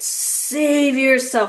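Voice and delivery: put-on loud, booming female voice. Retelling a female voice heard alone at home, booming female voice. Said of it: "like booming".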